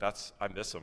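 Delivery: ordinary delivery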